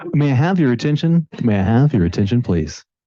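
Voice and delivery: very loud, booming public-address radio announcer voice. Speaker at a microphone before a talk asks for attention in a radio voice. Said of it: "That's the radio voice".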